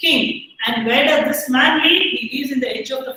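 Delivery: ordinary delivery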